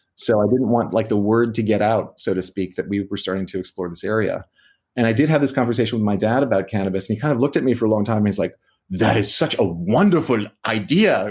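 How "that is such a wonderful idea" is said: put-on thick, laid-on German accent, spoken slowly. Retelling what the speaker's dad said about the cannabis idea, heavy German accent. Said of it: "with this very heavy German accent".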